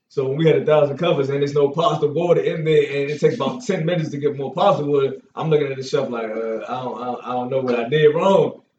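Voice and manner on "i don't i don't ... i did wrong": flustered, tripping, halting stuttering stammer. Retelling facing the chef after a mistake in the kitchen, retelling stuttering. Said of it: "I just started stuttering there".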